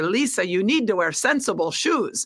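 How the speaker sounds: speaking in a Scottish brogue. Recalling advice from the former athletic director, in Christine Grant's Scottish brogue. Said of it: "in her Scottish brogue".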